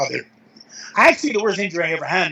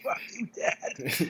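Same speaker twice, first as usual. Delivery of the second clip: slow, whispered mock scream. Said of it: "that's an odd way to get psyched".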